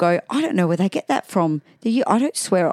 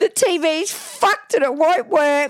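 put-on very high voice of a really upset little boy; 10 semitones higher than usual. A mother retells her son walking in shaking the TV remote, imitating upset Ollie. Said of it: "he walked in really upset".

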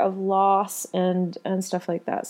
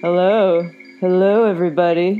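deep, loud, low-pitched anchorman announcing voice; 6 dB louder than usual. Greeting everybody at the start of the report: Ron Burgundy voice. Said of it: "little Ron Burgundy in there for you".

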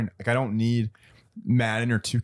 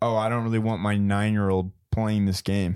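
ordinary delivery

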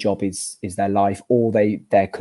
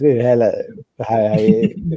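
put-on drunken slurred speech. Retelling meeting an old mate when both were drunk, imitating drunken slurred words. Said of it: "Really slurring our words".

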